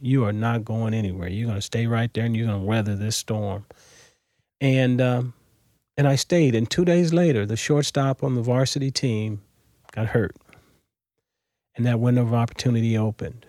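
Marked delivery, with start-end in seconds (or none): 0.0-3.6 stern, firm, no-nonsense commanding voice. Retelling what the high school coach told him on the phone: imitating a stern coach. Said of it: "very sternly told me".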